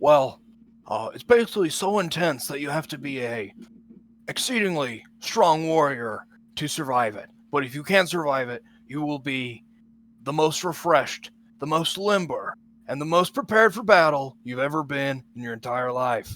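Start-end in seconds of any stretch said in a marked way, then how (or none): 1.1-16.4 put-on dude bro voice, louder. Describing an intense service to a customer in character: dude bro accent. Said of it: "My dude bro accent".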